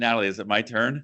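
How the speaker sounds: usual speaking voice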